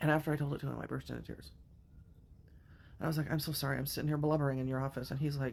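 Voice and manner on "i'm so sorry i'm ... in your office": plain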